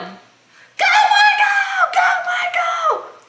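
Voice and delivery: very high, very slow, drawn-out cheering yell. Retelling cheering on a kid at a soccer league: retelling a yell. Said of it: "I was yelling".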